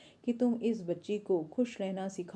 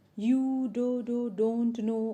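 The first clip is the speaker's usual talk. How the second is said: mocking put-on stammer, louder; 3 semitones higher, 5 dB louder than usual. Reading a story aloud, a father copying his daughter: mimicking a stutter mockingly. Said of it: "उसके father भी उसको mimic करते हुए".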